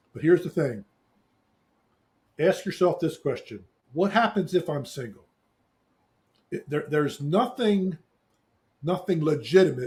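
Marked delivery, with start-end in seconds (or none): 9.3-9.9 strong emphasis on the word 'legitimate'. Speaker arguing to listeners about being single, stressing 'legitimate'. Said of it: "and I stress the word legitimate".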